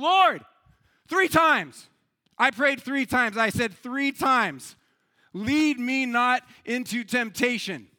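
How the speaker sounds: loud, livid, furious shout. Telling of a livid man shouting from the back of a church, retelling an angry shout. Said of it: "He shouts from the back of the room".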